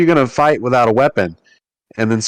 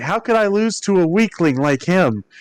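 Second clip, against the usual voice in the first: furious, frustrated outburst, pitched up; 6 semitones higher, 3 dB quieter than usual. Retelling a game scene where Riku storms upstairs, mock-angry and frustrated. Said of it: "he is he's very mad".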